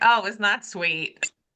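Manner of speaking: ordinary talk, nothing marked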